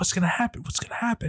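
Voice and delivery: mock-anxious voice. Recounting another person's reaction to suspense, imitating anxious suspense. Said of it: "Grant's like on the edge of his seat".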